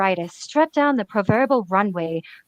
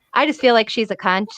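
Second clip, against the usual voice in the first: usual speaking voice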